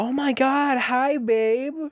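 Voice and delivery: mock shrill, very high, loud gushing. Recounting a woman greeting a man in a restaurant: imitating her loud greeting. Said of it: "hear her throughout the entire restaurant go".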